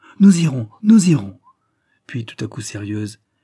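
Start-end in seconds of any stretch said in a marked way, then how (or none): 0.2-1.4 high, very loud, almost gleeful cheerful exclamation. Reading a little girl's reply to a plan to visit her mother's grave, crying out almost cheerfully. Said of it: "Claire s'écria presque gaiement".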